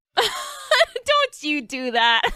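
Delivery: slow, high, laughing protesting tone.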